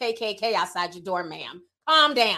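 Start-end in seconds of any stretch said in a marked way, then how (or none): none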